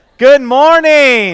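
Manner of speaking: very loud, slow, drawn-out, rousing delivery.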